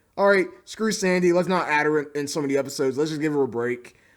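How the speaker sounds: usual speaking voice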